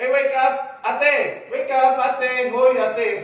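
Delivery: calling out loudly. Demonstrating a check on an unresponsive woman, shouting for a response. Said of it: "have you observed how I shouted for response?".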